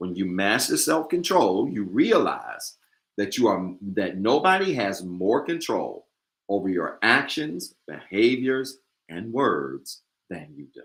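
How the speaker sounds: slow, drawn-out, measured, deliberate delivery. A speaker repeats their previous sentence for the audience, speaking slowly. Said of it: "I need to say that again slow".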